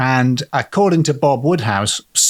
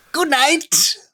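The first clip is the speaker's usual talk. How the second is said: sarcastic, mocking jeer, pitched very high; 14 semitones higher than usual. Retelling a story about a demon, the speaker imitates its mocking voice. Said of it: "it was a merely mocking".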